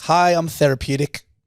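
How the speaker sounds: put-on lisp. Acting out giving your name in an imagined scene: put-on lisp. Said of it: "and you had a lisp".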